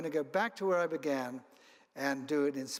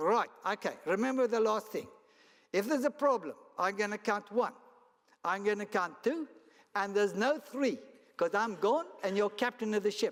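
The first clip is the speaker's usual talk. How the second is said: put-on, higher-pitched, best-effort South African accent; 6 semitones higher than usual. Retelling what a man told him before a trip, in a South African accent. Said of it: "use my best South African accent".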